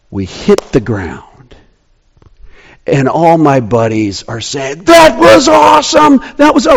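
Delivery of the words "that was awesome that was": put-on screaming holler, higher-pitched. Retelling buddies after the car landed: imitating friends screaming. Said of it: "we're screaming, we're whooping, we're hollering".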